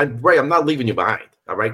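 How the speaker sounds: New York accent with pitch jumping.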